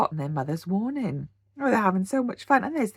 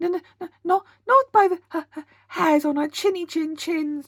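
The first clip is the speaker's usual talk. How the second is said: frightened, quavering, high, trembling stammer; 8 semitones higher, 4 dB louder than usual. Narrator reading a story, Boris answering the wolf at the door, trembling voice. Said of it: "trembled Boris".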